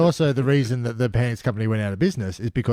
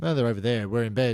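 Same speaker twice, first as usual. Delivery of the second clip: usual speaking voice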